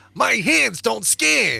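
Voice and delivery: high, slow, rough character voice. Quoting a favorite line from a ride preshow: Rocket quote voice. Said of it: "Rocket going".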